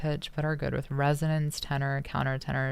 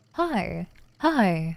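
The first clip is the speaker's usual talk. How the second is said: loud, high-pitched voice pushed up a register; 4 semitones higher, 5 dB louder than usual. Trying out voices: higher pitched voice. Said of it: "Does this count as a higher pitched voice?".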